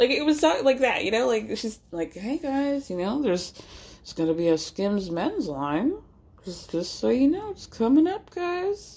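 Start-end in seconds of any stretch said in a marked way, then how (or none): 2.1-9.0 spaced-out, totally out-of-it voice. Imitating a reality star talking to fans, seeming out of it: imitating Kim Kardashian's out-of-it voice. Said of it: "talking in this weird Meredith Marks, "I took a pill in Ibiza" kind of voice".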